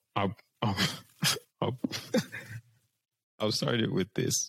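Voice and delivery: giggly, laughing through the words, stumbling start. Starting to answer a question about light, laughing while talking. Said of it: "Why are you laughing?".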